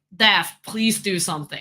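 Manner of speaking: ordinary delivery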